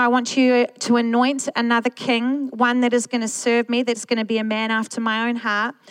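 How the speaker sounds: plain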